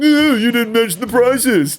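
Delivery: mean, sneering, mocking put-on voice. Quoting someone's remark, the speaker slips into a mean, mocking put-on voice. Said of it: "I was about to do a mean voice... And then I just did it anyway".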